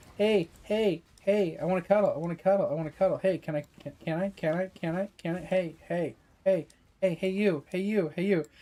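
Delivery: nagging, pestering, repetitive cat-like voice. Describing the cat Jake begging to cuddle, acting out its demands: imitating Jake pestering. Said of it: "meowing at you over and over again".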